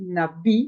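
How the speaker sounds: stress on syllable bi, na light. Explaining the syllables of a word, stress on syllable bi. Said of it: "perceba que eu dou ênfase no bi".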